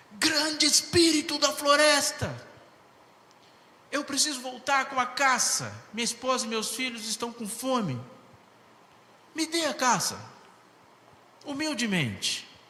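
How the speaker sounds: humble, shouted tone.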